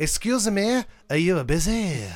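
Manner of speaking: put-on French accent. Describing role-playing at the living room door, the speaker asks someone: fake French accent. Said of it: "I'll pretend to be French".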